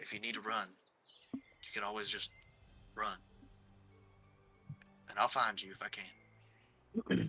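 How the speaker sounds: very quiet, hushed, close-up whisper. During a hug in a shared story, he speaks into your ear: whisper. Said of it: "He whispers in your ear".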